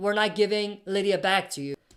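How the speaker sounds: ordinary talk, nothing marked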